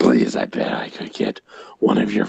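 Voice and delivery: put-on devil character voice. In a scene comparing worshipper numbers with God, the devil answers: Satan voice. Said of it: "I got my Satan voice on".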